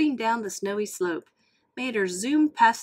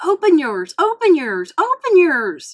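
booming, very loud, high-pitched excited outcry; 6 semitones higher, 9 dB louder than usual. Mater, exchanging gifts with Lightning, crying out to him. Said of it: "cried Mater".

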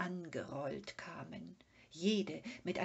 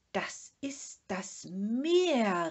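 very loud shout with Meer drawn out; 3 semitones higher, 8 dB louder than usual. Sniffing the wind, Moomin calls out to the Sniff before running off. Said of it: "rief Mumin und rannte los".

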